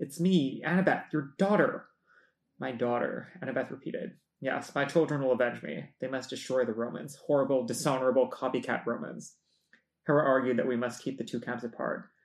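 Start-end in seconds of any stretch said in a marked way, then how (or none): 0.0-1.9 quavering, unsteady, trembling voice. Annabeth tells her mother, the goddess, who she is, with a trembling voice. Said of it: "Annabeth's voice trembled".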